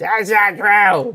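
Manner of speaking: high, shrieking, screeching slug creature scream. Voicing a slug king that has just been taunted: slug screaming. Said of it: "The slug screams".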